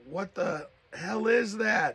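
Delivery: mock furious, high, angry shouted scream. Retelling how he ran out at a blue light: imitating someone screaming. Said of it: "he screamed, and he was like".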